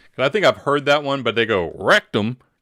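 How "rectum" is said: put-on East Texas accent, louder. Retelling the punchline of a joke: east texas accent. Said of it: "You gotta say with that East Texas accent".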